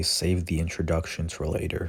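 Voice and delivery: normal talking voice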